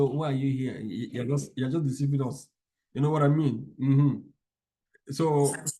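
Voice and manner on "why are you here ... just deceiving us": ordinary delivery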